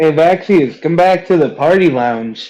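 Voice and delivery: loud shout, calling across a distance. A player calls to a party member far down the corridor, shouting. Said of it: "You shout that down the corridor".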